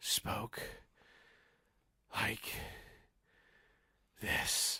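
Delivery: soft, breathy whisper, one word at a time. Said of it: "He spoke in sort of breathy, one word".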